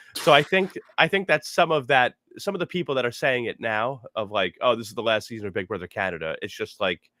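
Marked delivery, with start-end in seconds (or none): none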